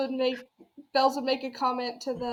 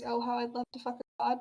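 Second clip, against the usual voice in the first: quiet mumbling under breath; 5 dB quieter than usual. Voicing the character Bells reacting to another player's words: muttering. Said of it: "Bells absolutely mutters".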